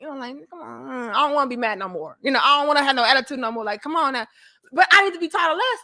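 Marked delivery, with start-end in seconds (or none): none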